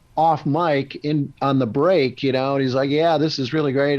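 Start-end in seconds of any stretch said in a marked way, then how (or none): none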